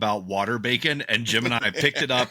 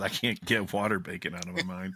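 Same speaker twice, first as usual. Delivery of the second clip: mock-defeated, much lower and quieter voice; 4 semitones lower, 7 dB quieter than usual. Quoting what Dan said a moment ago, imitating Dan's defeated voice. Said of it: "the defeat in Dan's voice when he says".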